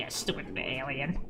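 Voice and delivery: very low, growled grumble, way down low. Acting out a scene between two characters, growling as Bones. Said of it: "Bones would just growl at him".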